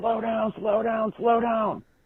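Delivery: shrill, very high-pitched screaming. Retelling how the man with the sign screamed at you, imitating someone screaming. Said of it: "he starts screaming at me".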